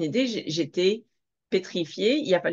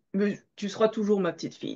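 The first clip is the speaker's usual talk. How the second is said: ordinary talk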